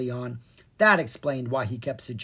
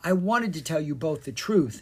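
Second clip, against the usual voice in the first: usual speaking voice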